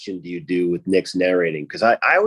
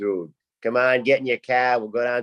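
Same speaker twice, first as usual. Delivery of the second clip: put-on Boston-accented voice; 4 semitones higher than usual. Showing how people from Boston talk, slipping into a Boston accent. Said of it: "easy to sort of get to the Boston".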